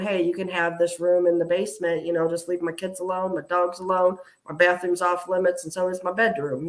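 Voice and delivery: ordinary talk, nothing marked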